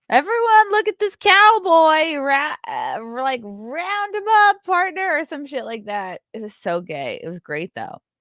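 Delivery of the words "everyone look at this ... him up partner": loud raised yelling. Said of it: "yelled to the whole restaurant".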